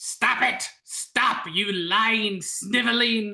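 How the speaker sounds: odd beast voice, calling out, rebuking tone. Voicing the creature's voice that cuts into the scene, shouting creature voice. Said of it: "it is shouting through".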